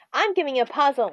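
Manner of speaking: usual speaking voice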